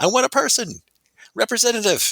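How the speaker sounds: very high, shrill yelling. Describing people who want a human representative on the phone, imitating someone yelling. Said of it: "That's why you're like yelling".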